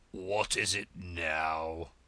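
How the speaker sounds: deep hoarse whisper. Reading a story aloud, the Frog speaks in a deep hoarse whisper. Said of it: "the Frog said in a deep hoarse whisper".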